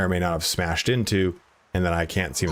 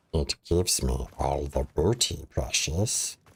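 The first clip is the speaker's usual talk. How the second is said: low, deep creature voice; 4 semitones lower, 5 dB quieter than usual. Performing a voice that a viewer redeemed: Gollum voice. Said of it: "That's too deep for a Gollum".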